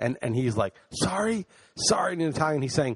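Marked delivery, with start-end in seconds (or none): 0.9-2.1 enraged high-pitched screaming. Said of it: "He's screaming at me".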